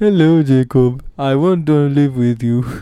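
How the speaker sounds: put-on light Nigerian accent. Playing Graham on a pretend phone call to Jacob, in a Graham voice, a bit Nigerian. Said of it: "you sound a bit different, Graham. A bit Nigerian".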